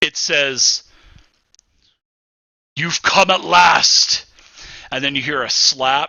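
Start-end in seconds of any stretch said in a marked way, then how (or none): 2.8-4.3 loud, rough, commanding, domineering, authoritative boom. As Holgren kicks in the door, a voice speaks: very loud, commanding voice. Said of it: "a very very loud and very commanding type of voice".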